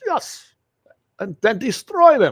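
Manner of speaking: bad English accent, high, swooping, slipping into Russian. Mocking a gun-ban politician with an attempted English accent. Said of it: "I can't do English accents".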